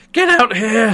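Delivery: put-on high yell. Retelling a scene where the woman at the desk calls to the back: imitating someone yelling. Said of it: "the woman immediately yells for the".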